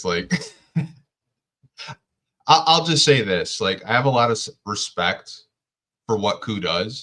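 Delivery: holding in a laugh, swooping pitch. Pistons podcaster talking about another Pistons podcaster, trying not to laugh. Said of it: "I'm trying not to laugh".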